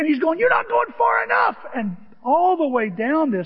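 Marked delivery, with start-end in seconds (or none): 0.4-1.6 put-on yell, much higher, louder. The speaker recounts a man yelling at him, retelling a yell. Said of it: "And he's yelling at me".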